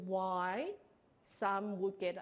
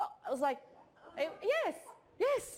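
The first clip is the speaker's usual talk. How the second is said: usual speaking voice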